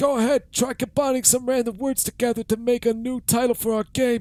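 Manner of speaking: very high put-on elderly-man character voice. During a game, telling the other player to combine words, in an old man voice. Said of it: "I'm gonna go back to the old man voice".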